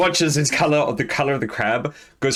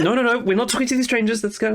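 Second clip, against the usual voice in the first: high, rushed, hurried mother voice; 9 semitones higher than usual. Voicing a mother hurrying her child away from strangers: voicing the mom. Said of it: "she keeps putting".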